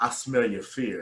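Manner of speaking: slow, hushed stage whisper, close in the ear. Retelling what a petty officer half-whispered in a scared recruit's ear: imitating a half-whisper. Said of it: "he whispers in his ear".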